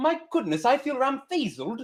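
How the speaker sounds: put-on British accent. Asked to say the odd word with a british accent. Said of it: "Do it with a British accent".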